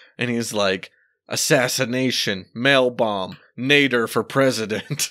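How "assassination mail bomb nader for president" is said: put-on, drawn-out mild yell. Retelling a cartoon scene of a character yelling into his phone: imitating Stephen Colbert character yelling. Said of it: "yelling into his phone".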